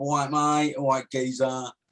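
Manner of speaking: put-on Southern US old man accent. Show how the Southerners would greet someone, in a Danny Dyer style Southern geezer voice. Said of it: "as the Southerners would say ... Danny Dyer for you".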